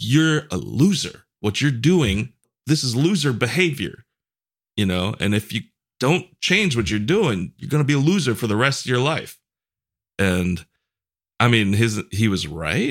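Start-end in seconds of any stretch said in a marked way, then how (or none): 0.0-9.4 high, barking, strict-dad-style scolding yell. Acting out what a yelling father said, retelling a father yelling. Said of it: "when he's he's yelling at you".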